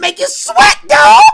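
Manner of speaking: very high, very loud, shrill hype holler. Retelling a sitcom scene about hot wings: Tommy impression. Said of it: "Tommy, like".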